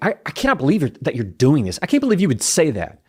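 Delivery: fast, stumbling, rushed burst of anger. Showing how angry words sound when not slowed down: rushed angry speech. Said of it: "You hear how just me slowing it down".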